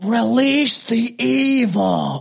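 high voice, evil drawn out long. Talking about a movie seen many times, doing an impression of a movie line. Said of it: "I hope that's a pretty good impression of it".

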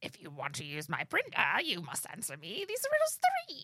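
silly, sing-song, high-pitched troll voice. Speaker explains the voices everyone has and demonstrates the troll voice. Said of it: "You have your troll voice, which sounds like".

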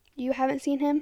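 ordinary delivery, nothing marked

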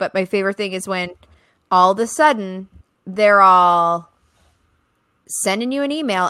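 sarcastic delivery.

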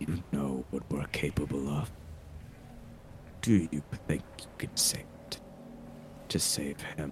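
low, soft, eerie whispering voice. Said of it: "I don't like the voices".

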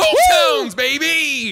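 very loud, very high shrill scream, swooping, drawn out. Imagining relaxing at a hotel and hearing a shout: imitating someone screaming. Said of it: "all of a sudden you hear".

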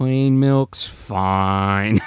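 mock sad, defeated resignation, "fine" drawn out. Recounting a kid told the chocolate milk is out, imitating sad, defeated Charlie. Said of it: "he's like just so sad and depressed about it".

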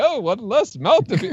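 bright, jolly delivery. Questioning how a supposedly menacing character delivers his line; mock-jolly line delivery. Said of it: "he's kind of like, oh, happy".

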